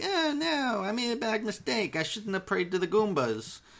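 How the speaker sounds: high, freaked-out, panicked voice. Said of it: "she gets all freaked out".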